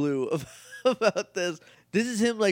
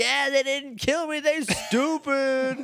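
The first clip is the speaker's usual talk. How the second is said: put-on very high-pitched, squeaky yell; 10 semitones higher than usual. Retelling a scene where Exfoliator shouts: imitating Exfoliator yelling. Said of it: "Exfoliator just yelling".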